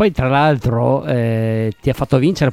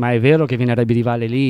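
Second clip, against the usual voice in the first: ordinary talk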